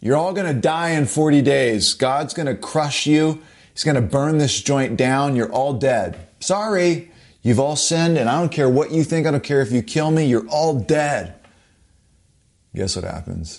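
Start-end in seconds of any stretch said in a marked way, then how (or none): 0.0-11.3 mock, restrained, mild screaming rant. Preaching the story of Jonah at Nineveh, the speaker acts out: imitating Jonah screaming. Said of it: "Jonah just starts screaming".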